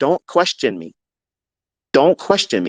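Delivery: put-on scolding tone. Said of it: "I'm scolding him".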